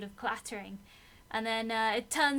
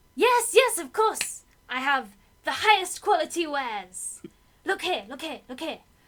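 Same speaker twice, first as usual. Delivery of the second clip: very loud put-on kobold merchant voice; 3 semitones higher, 8 dB louder than usual. Voicing a kobold merchant showing its wares: kobold merchant voice. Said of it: "can we see what you have?".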